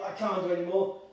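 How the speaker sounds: plain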